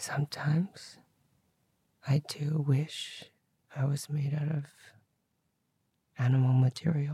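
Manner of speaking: whispered, hushed delivery. Answering a request to try whispering and share a secret: whispering. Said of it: "do you wanna try and whisper?".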